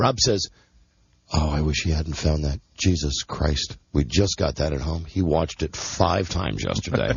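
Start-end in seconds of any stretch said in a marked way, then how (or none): 1.3-7.1 put-on mutter under breath, much lower pitch. Retelling a man's remark about a movie DVD, imitating muttering under breath. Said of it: "under his breath".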